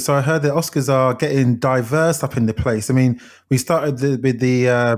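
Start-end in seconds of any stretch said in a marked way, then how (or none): none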